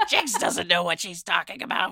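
put-on scornful old hag crone witch voice. Imagining someone from the witch community judging her: old hag voice. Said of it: "that's a good like crone witch voice".

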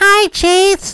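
loud, very high-pitched, squeaky puppet voice. Doing the Racist Elmo bit on camera, greeting Chase in an Elmo voice. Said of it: "It's Racist Elmo".

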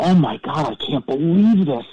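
shocked, stunned exclamation full of disbelief. Retelling own reaction on seeing the crash: retelling own shocked reaction. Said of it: "in shock".

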